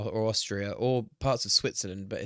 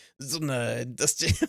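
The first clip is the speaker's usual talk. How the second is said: lousy, shoddy put-on Italian accent; 2 semitones higher than usual. Showing how to say industrial zone in a bad italian accent. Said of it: "a shit Italian accent to say industrial zone".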